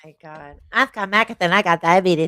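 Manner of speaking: teasing, taunting cartoon character voice. Asked to do some South Park, the speaker performs a Cartman voice. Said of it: "Cartman when he's making fun of".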